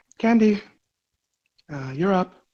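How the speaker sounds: light, soft-spoken tone. Retelling how she peered into the tent to wake candy, very soft voice. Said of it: "with a very soft voice".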